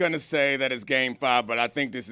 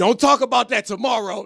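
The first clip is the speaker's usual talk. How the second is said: high, hollering, heckling yell; 9 semitones higher, 4 dB louder than usual. Retelling what fans behind the speaker yelled: imitating fans yelling. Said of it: "started yelling at me".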